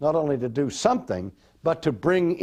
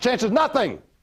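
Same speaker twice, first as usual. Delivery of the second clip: very fast, words run together, pitched up; 9 semitones higher, 3 dB louder than usual. Repeating a phrase for the audience a final time, very fast, run together.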